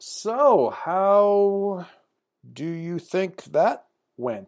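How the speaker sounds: very slow, distracted, not-quite-listening voice. Retelling a story, voicing a man writing something while asking a question, imitating a slow, distracted voice. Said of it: "He's in that kind of slow, not quite paying attention voice".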